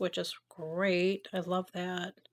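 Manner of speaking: slow, ironic, sarcastic drawl. Complaining about how one's bangs fall: sarcastic. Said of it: "I'm being sarcastic when I say I love that".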